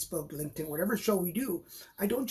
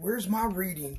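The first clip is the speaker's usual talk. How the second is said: put-on country accent. Voicing a viewer asking for a reading: Mitchell in a country accent. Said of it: "I just gave Mitchell a, a, a, a country accent".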